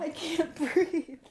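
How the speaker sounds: talking through laughter. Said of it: "I'm laughing so fucking hard".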